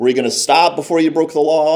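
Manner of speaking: mock smug, sarcastic tone. Retelling what a cop said to the speaker on the first day, mock-sarcastic, arrogant cop. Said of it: "came up to me with like some sarcasm and arrogance".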